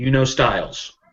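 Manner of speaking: very quick, rushed, rattled off. Role-player voicing his character, who glances back at the group, very quickly. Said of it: "He just says very quickly".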